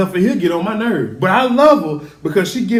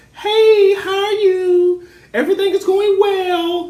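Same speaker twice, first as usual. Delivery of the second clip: very high, slow, drawn-out fake polite voice; 11 semitones higher than usual. Mocking parents who get on the phone, imitating a fake little phone voice. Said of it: "Y'all put on that little fake voice".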